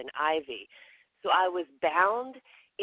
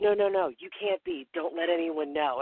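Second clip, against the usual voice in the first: put-on whisper. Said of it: "whispers in my ear".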